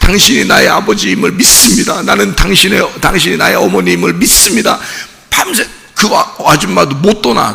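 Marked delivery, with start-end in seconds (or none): 0.0-4.8 mock sobbing, begging through tears. Retelling a person begging a stranger to be his father: imitating someone crying. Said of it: "막 다리를 막 굴르면서 막 울어".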